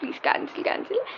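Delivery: mock soft, whispery, breathy, tearful crying tone. Retelling pleading with a support agent to cancel a Swiggy order, imitating her own crying. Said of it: "And I started crying".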